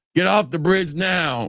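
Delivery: put-on police bullhorn voice. Retelling the police ordering them off the bridge: imitating police over a bullhorn. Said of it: "I hear the police over the damn bullhorn".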